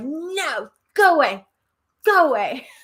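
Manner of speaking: mock very slow, high, dragged-out man's shout. Retelling how a man at a grave yelled at the speaker: imitating a man yelling. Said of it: "he yelled at me like".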